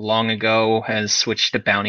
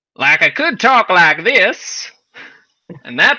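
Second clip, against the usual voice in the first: loud, high Tennessee Southern accent; 9 semitones higher, 7 dB louder than usual. Explaining how Southern characters in a setting talk, demonstrating a Tennessee-style accent.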